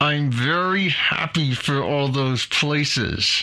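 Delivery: through gritted teeth. Speaker reacting to services not being uniform internationally, through clenched teeth. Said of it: "see if you can hear my clenched teeth as I say this".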